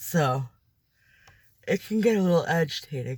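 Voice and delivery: speaking while yawning. Talking about work while unable to stop yawning. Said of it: "I can't stop yawning".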